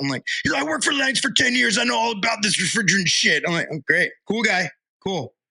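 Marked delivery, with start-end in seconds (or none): 0.6-3.4 mock loud yelling in a man's voice. Retelling what a man shouted at them while leaving in an Uber, imitating a man yelling. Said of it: "He's yelling at us on the way out".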